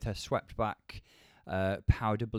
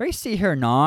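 put-on Northern Irish accent, louder; 7 semitones higher, 12 dB louder than usual. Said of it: "trying to do the Northern Irish accent".

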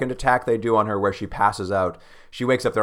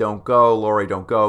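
mock frantic shouting, drawn-out panicked yell; 3 dB louder than usual. Recounting a story, the speaker acts out a frightened woman at the door, imitating a freaked-out yell. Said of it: "she's yelling at the door like".

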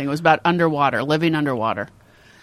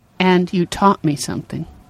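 ordinary delivery

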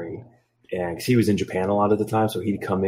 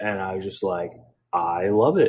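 normal talking voice

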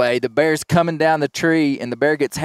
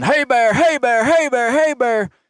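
very high, urgent, repeated hollering; 9 semitones higher than usual. Retelling scaring off a grizzly bear in the woods: imitating own yelling. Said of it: "I start yelling".

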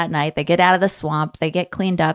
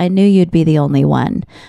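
imitated muttering, louder; 3 semitones lower, 4 dB louder than usual. Retelling what one contestant said to another: imitating saying under her breath. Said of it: "under her breath".

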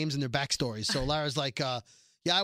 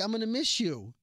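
put-on sweet, cutesy, pitched-up old-lady voice; 6 semitones higher than usual. Retelling a scene, quoting a grandma acting all cute: imitating a grandma acting cute. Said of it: "she's acting all cute like a grandma".

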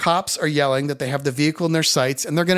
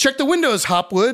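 very high-pitched, nervous, jittery shout; 10 semitones higher, 3 dB louder than usual. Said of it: "Tom yells".

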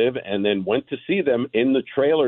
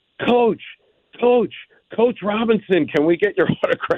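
very high-pitched yelled call; 12 semitones higher than usual. Retelling a fan calling to the manager heading to the dugout, a yell. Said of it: "guy yells out".

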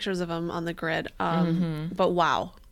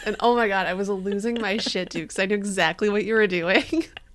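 plain

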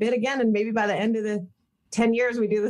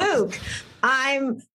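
grinning, smiling, barely holding a straight face; 2 semitones higher than usual. Retrying a serious, emotional line as others call cut, smiling while saying it. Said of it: "You can't smile while you're doing it".

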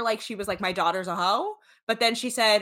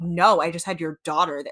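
put-on defensive tone, lower; 3 semitones lower, 3 dB louder than usual. Retelling what he said to the mother: imitating a defensive reply. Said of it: "weirdly defensive".

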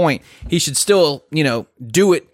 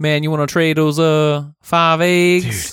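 jive slang voice. Joking about a community law requiring everyone to speak jive: jive slang voice. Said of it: "we have to speak jive".

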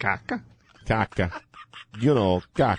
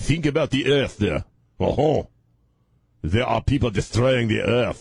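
worst possible fake French accent. Retelling what a man told a crowd in French, bad put-on French accent. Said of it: "Think that's the worst French accent I've ever done in my life".

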